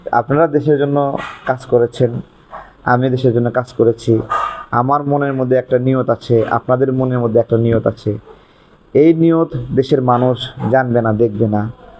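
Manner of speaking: normal talking voice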